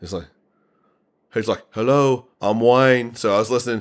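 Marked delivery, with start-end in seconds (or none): 1.7-3.2 put-on Brummie accent, slower. Trying to work out a Brummy accent from the only person you could think of, imitating Wayne's Brummy accent. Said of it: "how could I do a Brummy accent".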